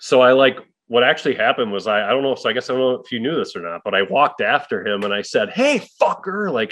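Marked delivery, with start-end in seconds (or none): 5.5-6.5 mock, shrill, very high, loud callout. Retelling calling after someone walking out of a bar: retelling calling out loudly. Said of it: "out loud at the bar".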